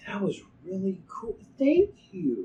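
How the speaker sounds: high, loud, grateful game character voice.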